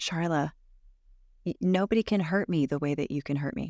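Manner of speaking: ordinary talk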